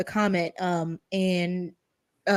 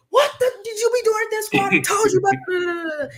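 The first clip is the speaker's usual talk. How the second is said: mock scolding yell, much higher; 12 semitones higher, 3 dB louder than usual. After a call from the school, acting out a mother confronting her child: imitating mom yelling. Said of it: "it's not just a matter of like yelling".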